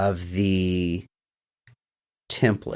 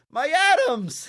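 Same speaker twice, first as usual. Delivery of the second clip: high, slow, anguished cry. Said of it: "The teacher goes".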